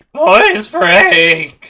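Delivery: put-on teenage gnoll voice. Joking around during a game, doing a put-on teenage gnoll voice. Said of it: "gotten far too good at doing that voice".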